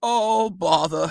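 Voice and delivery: like a cartoon bear. Voice your dog being picked up from her blanket to go outside, in a Winnie the Pooh voice. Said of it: "if she could talk like Winnie the Pooh".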